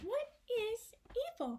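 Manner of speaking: very high, sing-song, swooping tune. Asking the audience a question in a put-on voice: Dora the Explorer impression. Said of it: "That was my Dora the Explorer impression".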